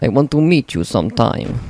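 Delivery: eastern European, Russian-style accent. Addressing listeners who don't know the speaker, in a russian accent. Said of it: "Don't know how that ended up in a Russian accent".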